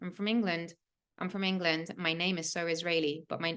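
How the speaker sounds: usual speaking voice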